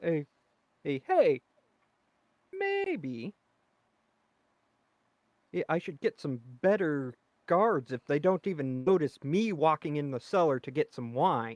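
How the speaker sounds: commanding, authoritative, in-charge tone. Bluffing past guards in character, caught in the cellar: authoritative voice. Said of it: "in my best authoritative voice there".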